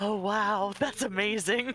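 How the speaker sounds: dazzled, gushing, starstruck awe. Voicing a character watching a trainer flex: starstruck awe. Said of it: "J J has, like, stars in his eyes".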